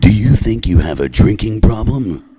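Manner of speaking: film trailer voice-over announcer voice. Retelling reading a bumper sticker in a phone booth: movie voice guy. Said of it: "I turned it into the movie voice guy".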